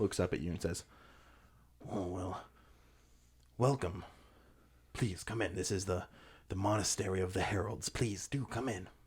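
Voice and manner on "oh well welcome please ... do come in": put-on ancient, wizened old goblin woman voice. Game master voicing an old goblin woman who walks over to the group: old wizened goblin woman voice. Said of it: "wizened goblin woman who kind of pushes herself up".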